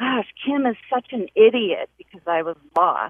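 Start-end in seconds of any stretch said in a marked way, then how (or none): 0.0-1.9 sudden, high, yelled-out loud outburst. Retelling yelling in frustration while lost driving: imitating own past yell. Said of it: "I yelled out".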